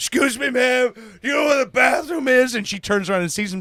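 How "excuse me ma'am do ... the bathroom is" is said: high, put-on drunk voice, acting drunk. Retelling how a man pranked a wife at a bar: imitating someone acting drunk. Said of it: "acts like he's drunk".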